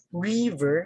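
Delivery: pitch lifted up on ri of river. Teacher explains using pitch to stress a word: higher pitch on 'ri' in river. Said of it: "I use pitch on that manner".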